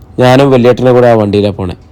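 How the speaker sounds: plain reading voice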